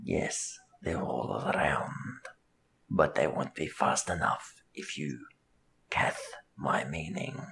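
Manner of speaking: hushed, very quiet near-whisper, close to the mic. Voicing Arthur as he leans down to Sawtooth with a hook, very quietly. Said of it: "And just very quietly".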